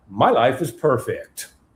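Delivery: bright, slow, deliberate, upbeat separate tone. Speaker demonstrates how he answers when greeted, separate, changed tonality. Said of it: "I change the tonality so that now I have a separate tonality".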